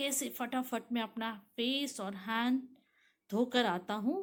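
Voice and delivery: ordinary talk, nothing marked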